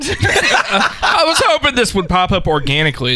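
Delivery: high-pitched, laughing, mocking parody voice.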